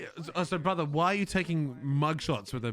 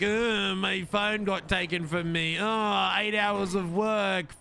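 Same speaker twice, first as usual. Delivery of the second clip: put-on overdramatic gen z voice, higher; 4 semitones higher than usual. Mocking a suspect's generation after another speaker calls him dramatic: mocking a dramatic Gen Z. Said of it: "Gen Z is always dramatic".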